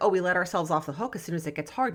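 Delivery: ordinary delivery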